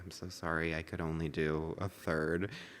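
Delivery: very soft, meek, sheepish and ashamed. Retelling coming out of the bathroom with a partly filled cup, speaker replays a mock soft, meek apology. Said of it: "hang my head in shame very softly and meekly".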